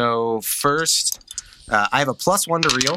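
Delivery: plain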